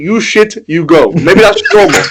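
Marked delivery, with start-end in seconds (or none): 0.0-1.1 very slow, clumsy, bad put-on Greek accent. Speaker voices what he said to the players, in a bad greek accent. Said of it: "That's a really bad Greek accent".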